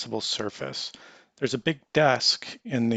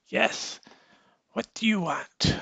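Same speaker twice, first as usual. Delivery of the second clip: put-on very high, wizened elderly old-man voice; 10 semitones higher than usual. Voicing a wizened old man behind a desk: wizened old man voice. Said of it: "a wizened old man, and he looks up and he says".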